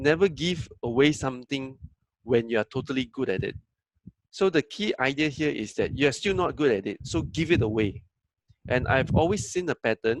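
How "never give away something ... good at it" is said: normal talking voice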